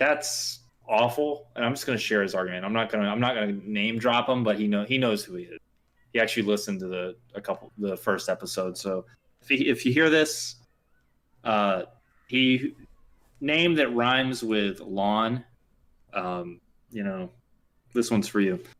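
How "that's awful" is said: high, slow appalled tone. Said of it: "I was just like".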